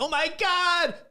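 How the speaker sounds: very high, thrilled, squealing exclamation. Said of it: "she's like".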